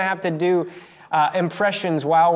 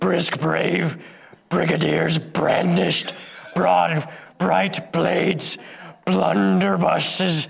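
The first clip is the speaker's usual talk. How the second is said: rough, gruff puppet-monster growling voice. Reading a tongue twister in a chosen voice, Cookie Monster voice. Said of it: "I picked Cookie Monster".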